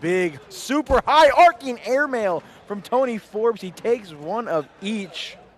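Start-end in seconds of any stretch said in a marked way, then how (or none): 0.0-3.6 loud, high-pitched, commentator-style yelling. A commentator calls the play, yelling. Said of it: "was I yelling?".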